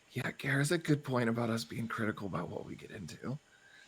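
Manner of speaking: whispered speech. Leaning over to another character in a scene to speak: whispering. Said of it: "just whispering so she can hear".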